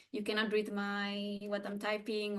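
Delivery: normal talking voice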